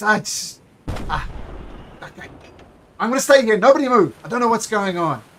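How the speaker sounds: frightened, high, loud, panicking voice. Voicing a ship's guard as cannons fire: panicked guard voice. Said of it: "the guard looks, panics and he looks around and he says".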